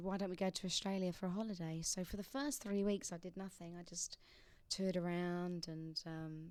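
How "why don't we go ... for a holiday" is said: ordinary delivery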